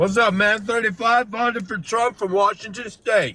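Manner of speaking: big, loud, high stentorian shouting voice. Answering a question over a call from a car: yelling. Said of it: "Why are you yelling?".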